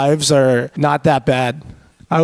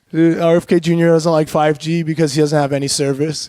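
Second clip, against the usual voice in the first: ordinary talk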